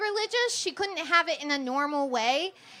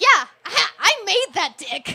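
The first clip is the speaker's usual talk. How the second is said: loud, lordly pronouncement, delivered big from on high; 4 semitones higher, 8 dB louder than usual. Joking about God watching people, voicing God: voicing God. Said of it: "He's like".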